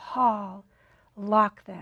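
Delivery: faint, hushed, half-whispered spirit voice. Retelling what a spirit said on a recording: imitating a half-whispery voice. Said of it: "a whispery voice saying".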